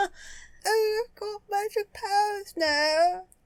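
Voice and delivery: put-on British accent. Voicing the boy with magic powers after being asked: British accent. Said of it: "I can't do a British accent".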